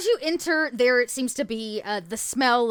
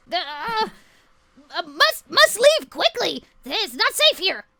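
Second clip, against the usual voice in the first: high, screechy, screeching bird-like creature voice; 5 semitones higher than usual. The narrator voices a bird character speaking to a visitor, in a screechy bird voice. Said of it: "He kind of screeches out".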